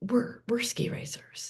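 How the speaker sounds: timid, shy, barely audible near-whisper. Retelling how a son's friend spoke to a student: imitating a shy boy. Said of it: "kind of very shyly goes".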